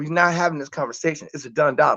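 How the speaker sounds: imitated whisper. Retelling telling the baby mama about the outfit: imitating own whisper. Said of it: "so I whispered to her".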